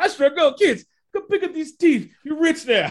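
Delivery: high-pitched put-on British accent. Retelling a scene, repeating what a character said: British accent. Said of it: "Then he said it in a British accent".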